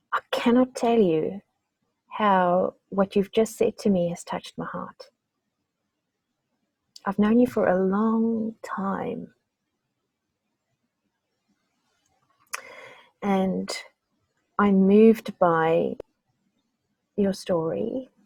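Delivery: choked-up, tearing up, on the verge of tears. Responding to the other speaker's story, choking up, teary. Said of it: "Sorry, I'm tearing up".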